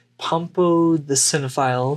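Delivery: plain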